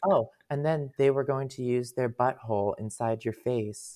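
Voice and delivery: put-on casual deadpan voice. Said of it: "he's just, like, casually saying it".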